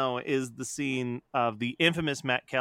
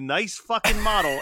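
play-acted, high-pitched screaming; 7 semitones higher, 5 dB louder than usual. Recalling what someone screamed at them in the park, retelling a scream. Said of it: "And you looked at me and screamed".

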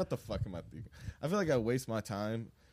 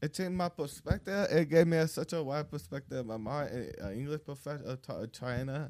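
put-on childlike voice, slight accent; 3 semitones higher than usual.

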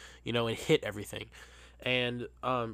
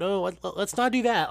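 put-on passive-aggressive voice, higher, slower; 7 semitones higher, 5 dB louder than usual. Retelling a server stopping a woman yanking on the tray, mock passive-aggressive server voice. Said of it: "like in that passive-aggressive server voice".

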